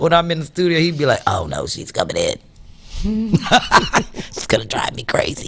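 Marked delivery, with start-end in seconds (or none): 1.3-5.5 slow, breathy, drawn-out whispered grumbling. Imitating what Chris says when she comes into the studio: Chris Deasy voice. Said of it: "That's my Chris Deasy voice".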